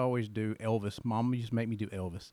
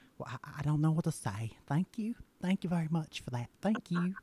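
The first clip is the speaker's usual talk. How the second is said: put-on Southern belle accent, much higher pitch; 6 semitones higher than usual. Demonstrating the voice he used to do for Fancy: Southern Belle voice. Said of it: "I would do the Southern Belle voice".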